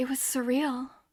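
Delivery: soft, calm, gentle, warm, loving unalarmed tone. Quoting how she described it, imitating calm, loving tone. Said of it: "it almost feels more loving. ... No alarm in her voice".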